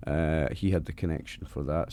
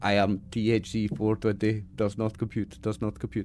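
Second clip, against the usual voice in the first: flat, monotone, mechanical robot voice; 4 semitones higher than usual. Introducing yourself to people by your robot name, in a robot voice. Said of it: "I talk like a robot so that nobody catches on".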